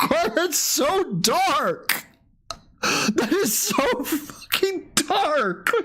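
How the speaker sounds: very high, very slow laughter through words. Reacting to a dark joke on stream: laughing while talking. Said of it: "why can't I stop laughing?".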